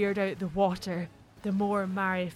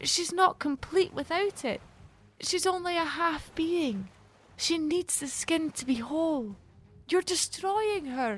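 firm, pitched-up, objecting tone; 9 semitones higher than usual. Speaking to a monster who stole a selkie's sealskin, protesting. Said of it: "Mary protested".

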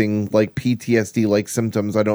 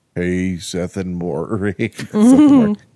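put-on deep, drawling voice; 2 semitones lower, 3 dB louder than usual. Imitating Seth's voice for the others: Seth's deep drawling voice. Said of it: "he's got such a deep voice".

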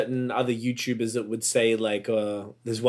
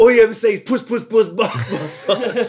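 put-on very high, shrill, loud angry outburst; 10 semitones higher, 7 dB louder than usual. Retelling an old argument, repeating own line: imitating own angry retort. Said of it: "I said it really angrily at you".

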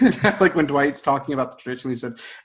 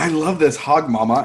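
muffled, mushed speech through a full mouth; 3 semitones higher, 5 dB louder than usual. Retelling a scene of Kevin eating: imitating talking with mouth full. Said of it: "he has his mouth full".

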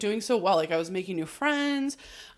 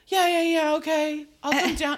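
put-on drunk voice, higher and louder; 7 semitones higher, 4 dB louder than usual. Retelling a scene where Jack answers from the roof: imitating drunk Jack. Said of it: "He's so good at playing drunk".

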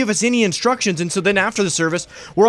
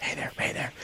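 mock whisper, quieter. Imitating a funeral home worker looking important: imitating someone whispering. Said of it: "just whispering".

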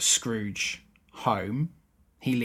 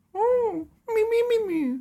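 voice stretched way up high and slow; 4 dB louder than usual. Retelling a film scene with Beaker: Beaker voice. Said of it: "Beaker going".

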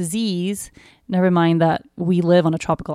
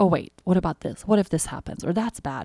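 mock, critical, disapproving put-on voice; 4 dB quieter than usual. Speaker describing worry, acting out the critical voice in their head: voicing a critical inner voice. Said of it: "this inner critical voice going like".

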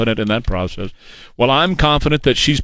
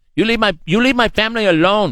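put-on Latin American accent, higher pitch; 9 semitones higher than usual.

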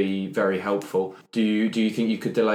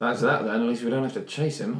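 quiet mutter under breath, aside; 2 semitones higher than usual. Speaking in character after identifying the body of the villain they hunted: muttered under breath. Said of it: "I say under my breath".

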